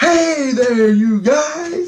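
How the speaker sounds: very high, very loud, very slow, drawn-out yell. Retelling calling down to figures below after counting: imitating his own loud yell. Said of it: "Like, really fucking loud".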